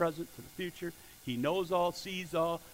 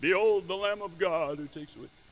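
put-on movie-star voice, grand epic film style; 2 semitones higher, 6 dB louder than usual. Reading John the Baptist's words from scripture: Charlton Heston voice. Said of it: "that was my Charlton Heston voice".

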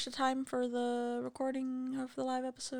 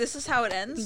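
ordinary talk, nothing marked

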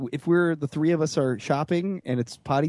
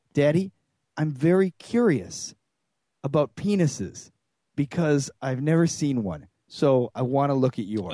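put-on mature, calm, measured delivery. Father retelling what his daughter said to him: imitating a mature, measured tone. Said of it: "in the most mature, measured tone I've ever heard out of her".

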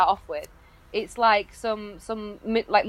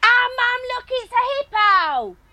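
mock, very high shout at the top of the lungs; 3 dB louder than usual. Telling a story about someone at the hippos, retelling a really loud shout. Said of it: "like shouting really loud".

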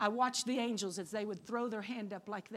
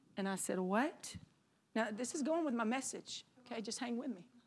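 plain

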